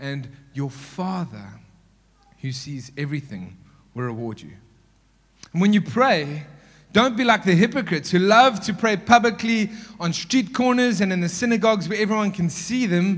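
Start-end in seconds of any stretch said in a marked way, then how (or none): 0.7-1.4 heavy stress on the word Father. Reading scripture aloud to listeners, putting stress on the word father. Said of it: "I'm going to emphasize that word every time I say it".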